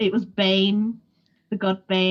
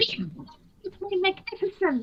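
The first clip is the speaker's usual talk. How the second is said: tiny, squeaky, high little kitten voice; 11 semitones higher, 5 dB quieter than usual. Retelling voicing a tiny kitten character in a game, squeaky high-pitched voice. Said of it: "I put this squeaky, high pitched Hampson voice".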